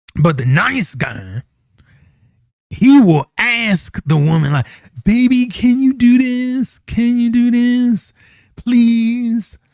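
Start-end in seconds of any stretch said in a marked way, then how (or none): 5.1-9.6 high-pitched voice with no bass. Describing how the nice guy asks the woman for things, imitating a voice with no bass. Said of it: "he doesn't have bass in his voice".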